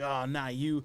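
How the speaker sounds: put-on grizzled, irritated man's voice. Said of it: "I'm grizzled Kyle Chandler".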